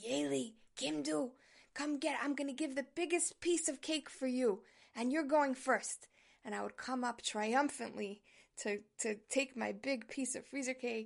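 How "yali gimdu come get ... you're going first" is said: put-on rasping, raspy old grandfather voice. Recalling family desserts, the speaker quotes his grandfather in a raspy grandfather voice. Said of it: "in his raspy zaidi voice".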